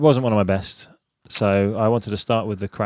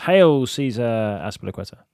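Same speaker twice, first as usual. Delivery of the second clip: ordinary talk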